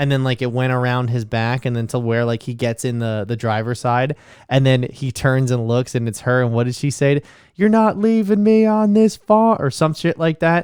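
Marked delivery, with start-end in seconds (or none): 7.5-9.6 high, screaming woman's voice. Retelling a scene where she screams at him, imitating a woman screaming. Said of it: "She screamed at him".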